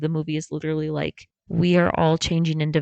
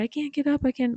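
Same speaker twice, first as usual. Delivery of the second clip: mock very high, panicked, frantic cry; 9 semitones higher than usual. Retelling a movie scene where the mom is stuck in the bathroom: acting out frantic panic. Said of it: "she's frantic in the bathroom".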